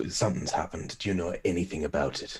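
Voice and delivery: hushed voice. A character quietly asks someone if they know anything about what has happened; hushed voice. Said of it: "in a hushed sort of voice".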